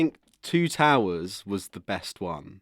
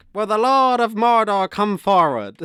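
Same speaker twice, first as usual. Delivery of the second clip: put-on loud, high-pitched, shouted Irish accent; 13 semitones higher, 8 dB louder than usual. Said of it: "he has Irish accent in some bits".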